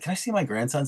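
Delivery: mock irritated tone. Retelling a movie scene of asking to see the grandsons: imitating an annoyed character. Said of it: "he's kind of annoyed".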